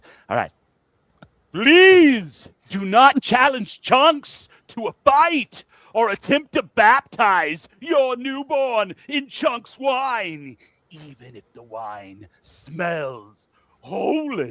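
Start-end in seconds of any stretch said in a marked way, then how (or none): 1.5-14.5 very high, very loud, very slow booming doom bard voice. Reading an ad script as asked: medieval bard foretelling doom. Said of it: "read this like a medieval bard who believes this script is a prophecy foretelling doom".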